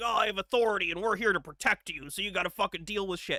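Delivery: self-important, hard tough-guy authority bluster. Mimicking police who act all tough: imitating police acting tough. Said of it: "they act all tough and they're like".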